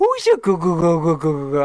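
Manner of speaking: put-on sing-song cooing baby talk, pitch rising and falling. Retelling how Charlie talks to the dog Radar: Charlie's baby talk to a dog. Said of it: "does all, like, the baby talk to Radar".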